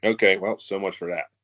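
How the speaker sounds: plain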